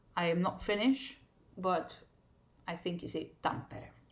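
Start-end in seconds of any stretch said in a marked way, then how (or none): 3.5-3.9 first syllable TAM- of Tampere leaned on. Asked how to say the finnish name correctly: stress on first syllable of tampere. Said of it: "with the emphasis on the first syllable".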